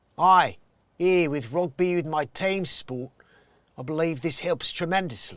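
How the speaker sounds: rough attempted Cockney accent. Speaker testing whether they can do an accent, attempted cockney accent. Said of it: "I'm trying to see if I can do Cockney".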